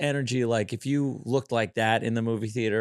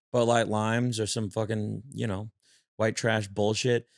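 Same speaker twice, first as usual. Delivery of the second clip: usual speaking voice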